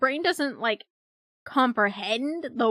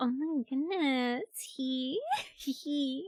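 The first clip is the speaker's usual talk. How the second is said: cutesy put-on voice, much higher and quieter; 2 semitones higher, 8 dB quieter than usual. Surprising listeners with an unexpected voice, cutesy voice. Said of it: "No one expects like the cutesy type of voice out of me".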